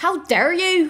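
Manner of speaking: put-on accent from Northern Ireland. Imitating a former teacher's usual line, in a possibly Northern Irish accent. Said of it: "I don't know if this is Northern Irish".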